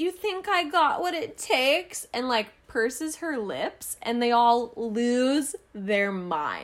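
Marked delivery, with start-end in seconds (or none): 0.0-2.1 put-on, high, little babyish voice. Retelling how a girl walks over to a group, in a baby voice. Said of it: "Like in a baby voice".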